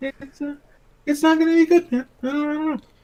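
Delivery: pitch creeping upward until very high. Commenting on bad news to co-hosts, voice rising in pitch. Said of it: "I don't know why my voice was going up".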